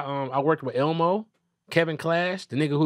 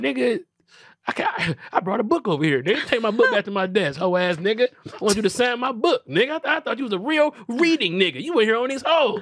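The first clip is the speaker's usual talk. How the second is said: put-on heated, angry tirade, pitched up; 7 semitones higher than usual. Telling the story of confronting a man about signing a book: retelling an angry rant. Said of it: "You sound angry".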